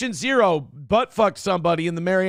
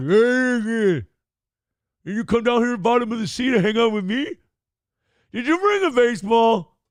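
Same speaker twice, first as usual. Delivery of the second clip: pitched-up shark creature voice with stretched-out hey; 5 semitones higher than usual. Reacting to a goblin shark picture, voicing the shark: imagined goblin shark voice. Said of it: "I imagine his voice. He's like".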